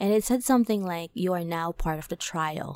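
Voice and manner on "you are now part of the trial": sinister demon-like voice. Retelling what a possessed person said: imitating a demonic evil voice. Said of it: "in a different voice, in, like, a, I don't know, demonic, evil voice started to speak".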